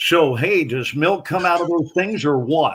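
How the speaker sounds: put-on newborn baby voice. Picturing Scott McKain on day one of his life, play Scott McKain as a newborn. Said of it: "my impression of Scott McKain on day one".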